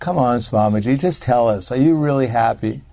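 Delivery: acted, mock-sarcastic tone. A storyteller quotes a boy challenging Prabhupada, retelling a sarcastic question. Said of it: "in an even more sarcastic way".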